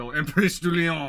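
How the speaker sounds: loud, exaggerated fake French accent, played for laughs. Speaker pronouncing a name in a mock french accent. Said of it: "we can make fun of French accents that I can".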